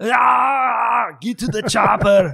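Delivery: very high, slow, creaky drawl with Ah dragged out. Doing an Arnold impersonation for the listeners: Arnold Schwarzenegger impression. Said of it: "my Arnold impersonation".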